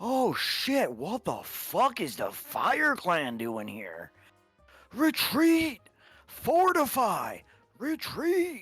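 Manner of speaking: very high, shrill, swooping, wild ogre yells. During a game, a player voices an ogre as fireballs go off, ogre voice. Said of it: "in the ogre's voice".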